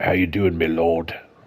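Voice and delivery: deep, gravelly fantasy dwarf voice. Showing how a game's dwarf could sound instead, in a more gravelly voice. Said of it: "a more gravelly voice".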